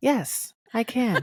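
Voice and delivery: voice-assistant voice. Answering a request to talk like Siri: Siri voice. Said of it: "Can you read it in the voice of Siri?".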